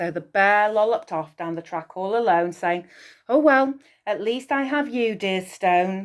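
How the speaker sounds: ordinary delivery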